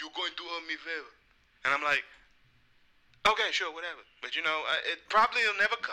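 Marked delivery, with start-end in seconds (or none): 0.0-1.1 fake Russian accent, much quieter. The speaker quotes what a man keeps saying, in his little Russian voice. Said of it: "in his little Russian and his Russian voice".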